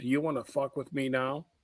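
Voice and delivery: soft, close, hushed half-whisper in the ear. Retelling walking up to someone at a wedding: retelling a half-whisper. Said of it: "I whispered in his ear".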